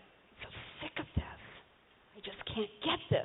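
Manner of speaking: mock self-deprecating tone. The speaker acts out how she talks to herself, in mock self-deprecating talk. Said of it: "in a very tearing myself down way".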